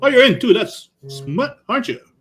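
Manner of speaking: fifties salesman type voice. Imitating how a man asked about liking smut, in a fifties salesman voice. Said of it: "that fifties Salman type of voice".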